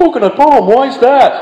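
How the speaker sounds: put-on dumb, stupid-sounding, very high-pitched voice. Retelling what another man asked back, in a stupid voice for that guy. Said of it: "Stupid voice for that guy".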